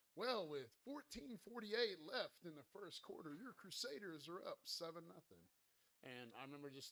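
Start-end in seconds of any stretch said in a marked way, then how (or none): 0.1-5.4 high, loud, sarcastic stadium announcer voice. Retelling the pa announcer's call after the first touchdown: imitating a sarcastic pa announcer. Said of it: "little sarcastic".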